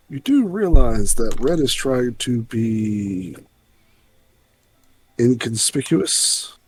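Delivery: slow, deliberate aside with drawn-out "be". Speaking in character to another player at a bar: said under the breath. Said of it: "I'm gonna say under my breath".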